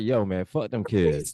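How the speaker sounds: blunt, straight-out, matter-of-fact, dismissive tone. Retelling what John Cena said about the kids: imitating John Cena. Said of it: "John Cena was straight up just like".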